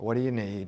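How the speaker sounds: reluctant, grudging tone. Showing how mercy sounds when given grudgingly: grudging reluctant tone. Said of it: "The tone of voice, the body language".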